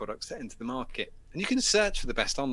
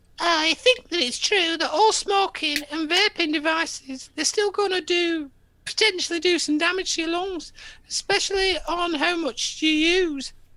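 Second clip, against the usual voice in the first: very high, loud, silly, stupid put-on voice; 6 dB louder than usual. Reading out a quote, the speaker mocks it in a stupid put-on voice. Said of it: "Let's go for a stupid voice".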